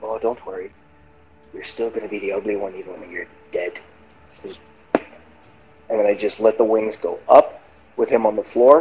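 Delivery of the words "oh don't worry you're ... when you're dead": whispering. Whispering in character to a falling enemy: whispering to a dying foe. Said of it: "I'm just whispering to him as he's falling".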